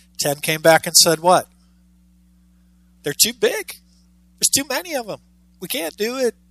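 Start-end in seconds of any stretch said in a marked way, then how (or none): 3.0-6.3 soft, slightly whiny complaining voice. Retelling the ten spies' report after their return, acting out a little whine. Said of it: "I try to have a little whiny part of my voice there".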